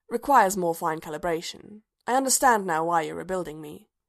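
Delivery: ordinary delivery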